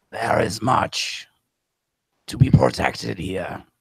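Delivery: grinding, gravelly, landslide-like stone-creature voice. Storyteller voices a man covered in rock stepping forward; gravelly, landslide-like voice. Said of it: "it looks mainly like a man, but a man that is covered in large pieces of rock. / it looks mainly like a man, but a man that is covered in large pieces of rock. His skin appears to be made out of smoot".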